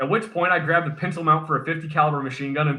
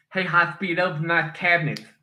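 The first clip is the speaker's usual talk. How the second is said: put-on bad lisp. Playing along in a story about a shop visit: Chief's really bad lisp. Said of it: "he talked with a really bad lisp".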